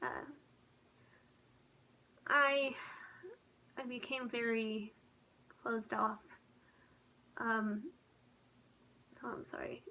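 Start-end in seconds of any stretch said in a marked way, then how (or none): 0.0-6.2 on the edge of crying, holding back tears. Speaker recounts how things changed at age sixteen: holding back tears. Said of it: "I'm trying not to cry".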